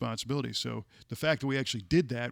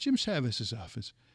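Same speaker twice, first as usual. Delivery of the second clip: put-on Irish-accented speech. Recounting calling an office back a week later, imitating Peggy's Irish accent. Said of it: "she had this great Irish accent".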